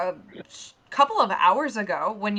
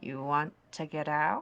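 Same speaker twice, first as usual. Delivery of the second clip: put-on old lady voice dropped low, hushed and sinister; 6 semitones lower, 7 dB quieter than usual. Narrator voicing an old lady speaking to the group; lowered voice. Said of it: "as she lowers her voice and goes".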